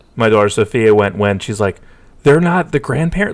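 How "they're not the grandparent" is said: high-pitched screaming outburst. Retelling how the daughter reacted to a movie: imitating Sophia screaming. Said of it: "screaming at me".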